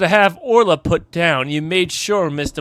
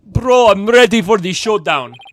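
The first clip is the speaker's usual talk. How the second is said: awful, loud put-on Jamaican accent; 4 semitones higher, 5 dB louder than usual. The speaker decides to try out a bad Jamaican accent. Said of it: "How could I not use a Jamaican accent?".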